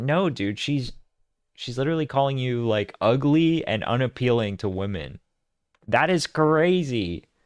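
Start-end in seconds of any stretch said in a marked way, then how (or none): none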